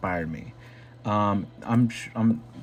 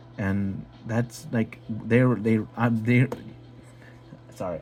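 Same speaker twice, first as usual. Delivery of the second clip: heavy stuttering, slower pace. Explaining what others have done for them, stuttering a lot. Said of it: "I'm stuttering a lot".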